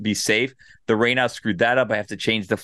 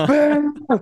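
put-on loud shout, higher; 4 dB louder than usual. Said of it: "I was so loud".

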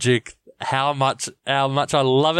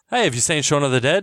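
plain

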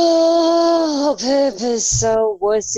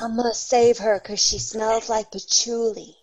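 whispered speech; 3 semitones lower, 5 dB quieter than usual. A character answering a threatening stranger, whispering. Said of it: "I whisper back".

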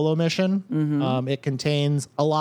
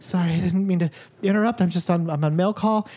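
put-on small girl voice, higher pitch; 4 semitones higher than usual. Narrating a scene, voicing the terrified girl Lynn at the door, in her very small girl's voice. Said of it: "you hear a very small girl's voice go".

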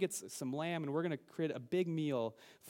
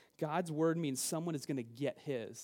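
normal talking voice

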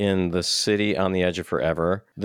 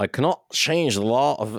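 put-on poorly done Scottish accent, pitched up; 5 semitones higher than usual. Quoting Scotty's line while Kirk needs the engines restarted, bad Scotty Scottish accent. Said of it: "that's a horrible Scottish accent".

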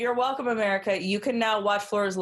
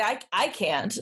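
ordinary delivery

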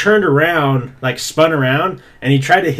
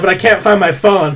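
put-on drunk voice, pitched higher; 4 semitones higher, 4 dB louder than usual. Retelling a drunk friend asking for his charger: imitating drunk Chandler. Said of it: "he's, like, way drunk".

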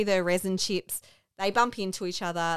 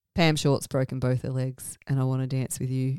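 utterly flat, low, deadpan delivery; 6 semitones lower than usual. Describing a movie scene, quoting a character's line said really flat. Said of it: "just says it really flat".

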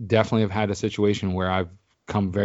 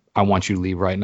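plain

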